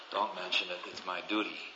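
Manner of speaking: mock bone-dry deadpan, spoken very quietly. Telling a joke, speaker voices the husband answering his wife: retelling a dry reply. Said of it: "And he says dryly".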